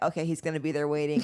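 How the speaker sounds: ordinary delivery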